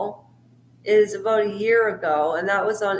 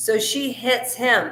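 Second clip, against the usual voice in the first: ordinary delivery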